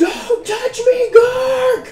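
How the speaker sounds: high, loud scream with sobbing through tears.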